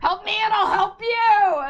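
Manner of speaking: very high, shrill, very loud holler. Shouting at the pigeons in character: in-character shout at pigeons. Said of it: "That's what she shouts in pidgin".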